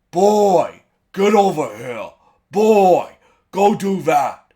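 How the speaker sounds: very loud, throat-straining warrior voice. Imagine out loud how Ryan Hurst will sound in the show, in a throat-hurting Kratos voice. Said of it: "I'm not going to do this voice because it hurts my throat".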